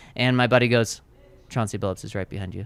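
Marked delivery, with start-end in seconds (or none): 1.5-2.7 casual, offhand, tossed out like nothing. Retelling how a buddy said a star was behind him: imitating a buddy playing it cool. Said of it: "And he says it like that".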